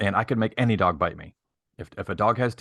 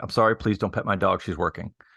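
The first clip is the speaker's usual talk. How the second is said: re-enacted polite, nice tone. Handler retelling what she says to people approaching her working dog, retelling a polite request. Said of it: "I'm nice and I say".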